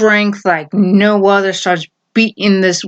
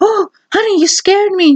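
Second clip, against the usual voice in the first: very high put-on woman's voice; 11 semitones higher than usual. Retelling a TV scene as the startled wife: put-on female voice. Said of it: "using the, the female voice now".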